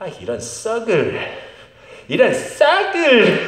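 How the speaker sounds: high, slow, exasperated tone. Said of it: "그러는 거예요".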